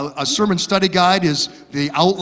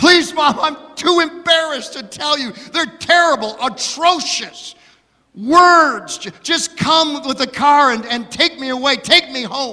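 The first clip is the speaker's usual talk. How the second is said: mock tearful pleading, higher pitch; 8 semitones higher than usual. Telling a joke about a bride calling her mother: imitating a crying bride. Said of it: "Still crying".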